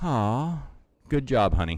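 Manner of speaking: mock sagging, deflated, let-down, half-hearted delivery. Speaker retells mom's reaction to the pan, imitating her deflated reply. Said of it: "kind of slumped her shoulders like".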